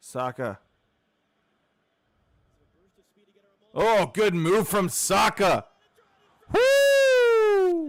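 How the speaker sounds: booming, very loud, rising commentator yell. Reacting live to a good move in a match: yelling into the mic. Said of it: "Sorry for yelling into the mic".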